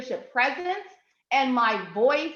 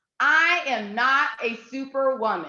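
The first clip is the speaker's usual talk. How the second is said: slow, fully authoritative, totally confident delivery. Leading a group in an affirmation, saying it with full authority and confidence. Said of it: "say this with full authority and confidence".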